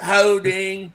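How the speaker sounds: weak put-on southern twang and drawl. Imitating a referee calling a holding penalty, in an attempted southern twang. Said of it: "But he's like".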